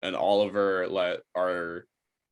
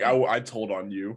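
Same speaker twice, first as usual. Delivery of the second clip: ordinary delivery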